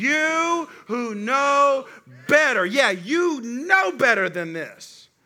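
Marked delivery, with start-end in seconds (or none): 0.0-2.6 mock scolding parent voice, much slower. Speaker leading the audience to say a parent's line, scolding parent voice. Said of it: "y'all got to say it like you're a parent".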